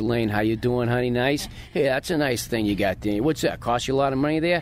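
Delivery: local Northern Boston accent. Showing how people talk in northern boston, the speaker's hometown: northern boston accent. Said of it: "Northern Boston, where I'm from, they all talk like this".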